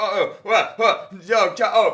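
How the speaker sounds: confused performer voice, high, loud, baffled yelp.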